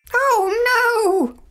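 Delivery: very high cry with a long, stretched-out oh. Winnie looks in the computer room and finds Wilbur missing, crying out. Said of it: "Cried Winnie".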